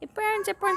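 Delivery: acted, high, tearful child's screaming cry. Retelling a child's cry after paint got on his face: Chito screaming and crying. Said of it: "I hear Chito screaming, crying".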